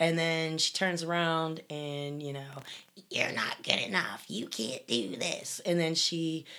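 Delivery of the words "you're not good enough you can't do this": deep invented villain voice. Quoting the inner critic in an evil character's voice: made-up Cersei voice. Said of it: "I just did".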